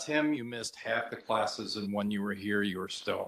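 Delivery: play-acted, soft, level, utterly deadpan delivery. Quoting his professor's reply to his demand for an explanation, retelling a deadpan reply. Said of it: "she looked at me in very deadpan".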